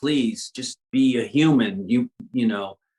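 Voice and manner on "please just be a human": usual speaking voice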